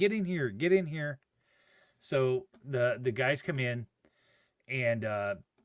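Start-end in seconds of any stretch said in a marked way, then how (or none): 0.0-1.2 hurried, urgent, screaming delivery. Retelling the moment the ambulance pulled up, recreating screaming at him. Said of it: "I'm screaming at him".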